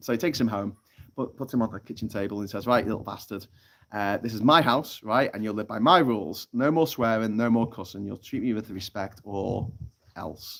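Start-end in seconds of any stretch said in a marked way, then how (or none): none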